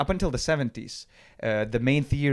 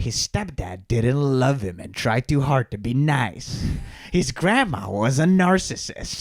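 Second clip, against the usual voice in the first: slow, dramatic documentary-style narrator tone. Mocking how a Ted Bundy documentary tells his story: mock-dramatic documentary tone. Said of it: "in this dramatic tone of voice".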